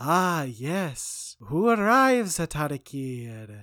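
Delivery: loud, with every word drawn out. Retelling the game's opening, imitating the fortune teller's distinct voice. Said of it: "she has a very distinct voice".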